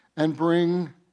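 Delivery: ordinary delivery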